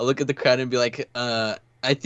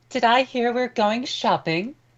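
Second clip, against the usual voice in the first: put-on woman's voice, pitched very high; 12 semitones higher than usual. Voicing a character who pipes up about shopping: put-on woman's voice. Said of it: "pipes up in a woman's voice".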